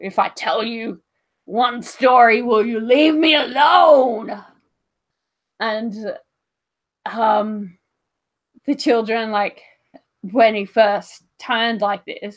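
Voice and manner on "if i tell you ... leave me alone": loud growly bear voice, stretched out. Retelling a man shaking off children climbing all over him; really growly voice. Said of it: "in a really like growly voice".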